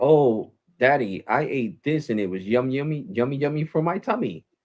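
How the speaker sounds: put-on high, little toddler voice. A father retells what his little daughter used to say, imitating Juju as a toddler. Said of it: "that's that's little kid stuff".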